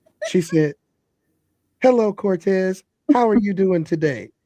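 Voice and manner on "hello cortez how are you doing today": polite, courteous telephone voice. Retelling a phone call from mom, doing her telephone voice. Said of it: "you have my mom's telephone voice. Let me see if I can do it".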